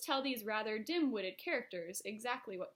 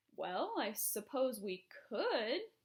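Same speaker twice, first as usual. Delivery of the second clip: slow, grudging, reluctant tone. Reading a story aloud, the Air Force head agreeing: grudging admission. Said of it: "admitted grudgingly".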